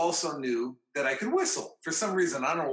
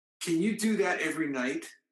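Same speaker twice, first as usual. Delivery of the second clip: mock dead-earnest, very serious, grave tone. Retelling how Paul turned to the speaker after the tune; imitating Paul's very serious voice. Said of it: "In a very serious voice".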